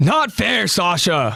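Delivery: high, loud, angry yell full of envy and jealousy. Voicing an angry, jealous boy: angry jealous yell. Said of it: "An angry and jealous Jean yells out".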